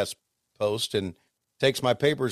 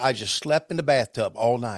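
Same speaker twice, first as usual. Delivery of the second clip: put-on Southern accent. Retelling what Deborah said after a tornado: Deborah's Southern voice. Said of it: "in her Southern voice".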